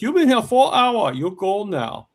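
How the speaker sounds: put-on Chinese-accented broken English. Showing the only chinese imitation the speaker can do: imitating a chinese accent. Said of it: "the only Chinese I can imitate is like".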